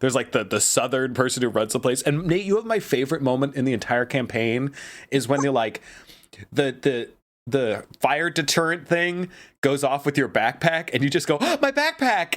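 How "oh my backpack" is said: very high, earnest, wholehearted cry. Retelling a player's reaction to a fire deterrent going off: imitating Nate's earnest exclamation. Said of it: "level of earnesty the way you say it".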